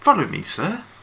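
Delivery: very high, snooty, smarmy English butler voice. Player voicing a servant who sees anyone but the mistress as below them, smarmy english voice. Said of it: "English and you know quite that kind of smarmy put down".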